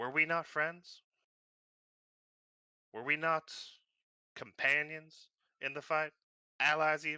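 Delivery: put-on Southern accent, wounded. A crime lord accuses the party of stealing from him, in a sudden Southern accent. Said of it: "He holds / Whose bright fucking idea was it to steal from me? / [name] suddenly and for no reason had a southern accent all of a sudden".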